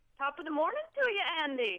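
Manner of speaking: put-on Irish accent. Asked by the others to give her best top of the morning, irish brogue. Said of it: "try her luck with her best Irish brogue".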